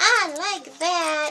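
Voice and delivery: high-pitched wicked-witch character voice. Getting into character for a page you made, in a witchy voice. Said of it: "in my witchy voice, going".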